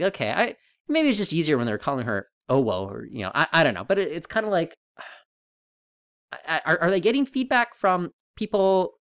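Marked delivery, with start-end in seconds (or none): none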